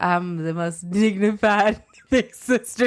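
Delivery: talking while laughing, speaking through laughter. Answering a sibling's teasing, laughing while talking. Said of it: "You couldn't even say that without laughing".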